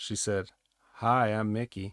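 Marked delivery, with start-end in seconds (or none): 0.9-1.9 mock-seductive tone, much slower. Retelling how a woman crossed the room to introduce herself to you, imitating a seductive voice. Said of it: "in a seductive voice".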